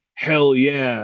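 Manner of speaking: plain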